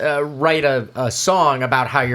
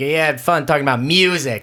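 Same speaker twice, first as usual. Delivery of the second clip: acted-out scornful, disdainful, sneering tone. Throwing the other speaker's words back at him: imitating a disdainful tone. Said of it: "with such disdain".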